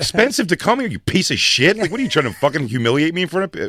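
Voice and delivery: mock furious yelling. Retelling own words to a coach after a chokehold: retelling a furious outburst.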